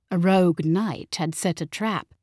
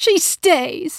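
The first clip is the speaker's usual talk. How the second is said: very high, loud, snapped delivery; 10 semitones higher, 5 dB louder than usual. Mama answers talk of sending the visitor away, snapping. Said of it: "snapped Mama".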